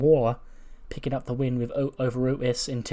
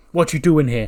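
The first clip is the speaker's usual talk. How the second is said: serious, loud, stern voice; 3 semitones higher, 8 dB louder than usual. Retelling Swerve once the door shuts: imitating Swerve turning serious and stern. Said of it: "serious, stern face, he's like".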